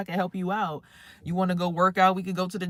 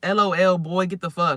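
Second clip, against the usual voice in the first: loud, drawn-out, dismissive, disrespectful brush-off; 6 dB louder than usual. Retelling how she answered his texts: imitating someone disrespecting him. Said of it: "she was saying all this shit to him".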